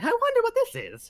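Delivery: very high, swooping character voice.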